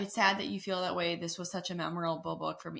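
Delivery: ordinary delivery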